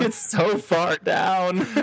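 put-on high, very slow, tearful crying voice. Retelling what a man said while climbing down, imitating someone crying. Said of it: "and he starts crying".

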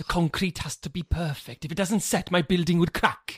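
put-on Welsh accent, plain conversational delivery. Describing Tom Hardy's role in the film Locke: Tom Hardy's Welsh accent. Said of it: "That was quite a good Welsh accent".

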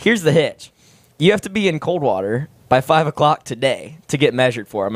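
plain

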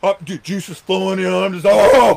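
high, loud, pumped-up, excited, hyped-up rant.

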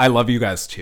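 fake-sounding tone. Retrying a requested line and judging it afterward: fake-sounding. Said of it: "That sounded, like, fake".

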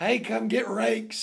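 ordinary talk, nothing marked

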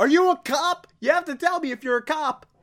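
high-pitched yelling. Retelling a scene with police outside, imitating Donkey Doug yelling. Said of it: "Donkey Doug just yells out".

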